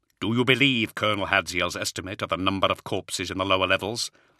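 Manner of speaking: ordinary delivery, nothing marked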